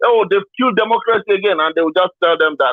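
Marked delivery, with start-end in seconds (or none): none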